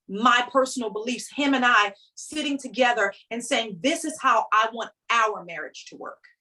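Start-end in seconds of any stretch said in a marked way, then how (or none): none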